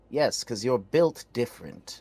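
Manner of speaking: normal talking voice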